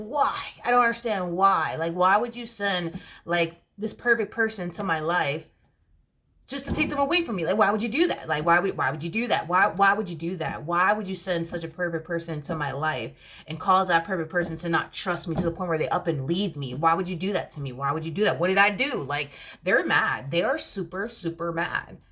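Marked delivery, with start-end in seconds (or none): none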